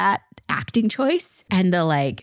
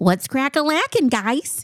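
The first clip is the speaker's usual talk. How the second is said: put-on nerdy 90s inflection; 7 semitones higher than usual. Showing how the speaker says a greeting, in a put-on 90s nerd voice. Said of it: "I use a 90s like nerd inflection voice in my voice".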